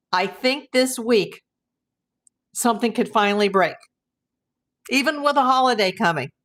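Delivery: choked-up voice, catching with feeling. Recalling an earlier hope about a breakthrough, getting emotional. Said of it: "I'm getting emotional now".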